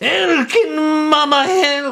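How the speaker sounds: high-pitched, haggard gnome voice. A storyteller voices a small gnome woman approaching the party, haggard Mama Bobo voice. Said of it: "she has a very like haggard voice".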